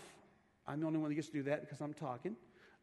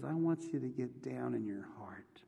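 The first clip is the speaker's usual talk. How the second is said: put-on whisper, lower pitch; 4 semitones lower than usual. Retelling a story of a voice speaking to a praying man: imitating a whisper. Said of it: "the whisper says".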